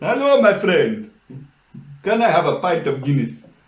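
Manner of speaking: put-on, fake South African accent. Speaker tries out an accent to do all day, in a fake south african accent. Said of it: "I have South African looks about me".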